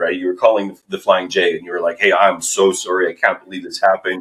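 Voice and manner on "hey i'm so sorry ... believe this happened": put-on mortified, apologetic voice. Retelling another speaker's phone apology to a gas station: imitating someone mortified. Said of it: "calling this person because you were mortified".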